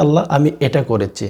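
normal talking voice

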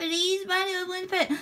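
sobbing, begging voice pitched very high. Begging Mario for a pet in a skit, acted crying while begging. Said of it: "Luigi, stop that crying".

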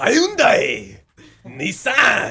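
high, very loud barking warlord voice. Defending the way you said a brand name; like a japanese warlord. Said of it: "Why'd you say it like a Japanese warlord?".

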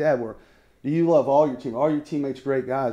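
ordinary talk

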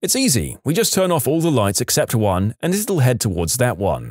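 ordinary delivery, nothing marked

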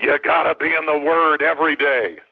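gruff, slow, growling coach voice. Retelling advice from a football coach in a coffee shop: imitating Bill McCartney's growl. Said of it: "he's got this growl to his voice".

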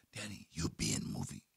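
close, quiet, hushed, breathy whisper. Retelling a meeting, the speaker imitates Andre whispering to him: imitating a whisper. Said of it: "He like whispered".

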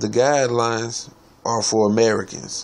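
emphatic, slightly harder stress on "Americans".

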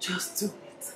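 soft, nearly silent whisper.

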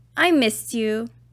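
plain reading voice

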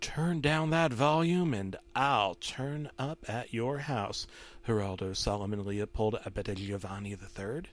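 hushed, soft, menacing demonic voice. McQueen, on a tape, addresses the viewer by full name; menacing demonic McQueen voice. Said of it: "McQueen said that in a menacing demonic tone".

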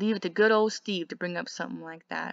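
ordinary delivery

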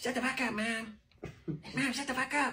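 put-on high, like a cartoon kid. Urged by another speaker to do it, the speaker delivers a Cartman voice. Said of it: "do your Cartman voice".

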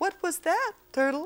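very high falsetto voice. Quoting what a man said: falsetto. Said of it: "in a falsetto, of course".

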